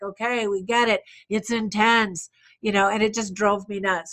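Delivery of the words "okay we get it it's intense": usual speaking voice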